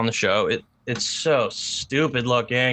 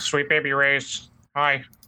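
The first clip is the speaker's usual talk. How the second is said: put-on frog puppet voice; 2 semitones higher than usual. Describing a face-swap app, quoting what it said, Kermit the Frog voice. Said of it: "he's got like a Kermit the Frog voice".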